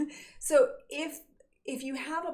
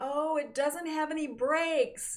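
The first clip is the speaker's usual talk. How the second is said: put-on, offhand, called-out yell; 5 semitones higher than usual. Retelling a parent's warning shouted to a departing driver: imitating father yelling. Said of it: "my father yells to me".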